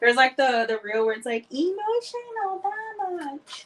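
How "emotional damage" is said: very high-pitched, half-whispered voice. Quoting a line from a popular reel: semi-whispered meme quote. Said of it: "I semi-whispered it just now".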